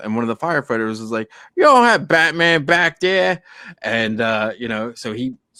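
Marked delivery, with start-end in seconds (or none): 1.5-3.4 botched put-on New York accent, high and loud. Retelling what a firefighter said to a waiter, in a bad new york accent. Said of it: "Is he from Boston?".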